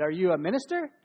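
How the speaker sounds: mock condescending, doubtful talking-down voice. Retelling a hospital volunteer's question: imitating a condescending tone. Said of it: "his condescending tone".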